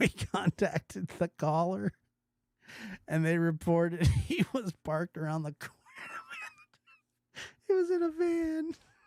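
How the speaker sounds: laughing while speaking. Reading a report aloud about a friend, laughing while reading. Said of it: "I shouldn't laugh at my friends".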